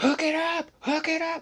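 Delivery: acted, very high, shrill, straining all-out yell. Retelling how he yelled at people who couldn't hear him, retelling a loud yell. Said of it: "he's just yelling as loud as".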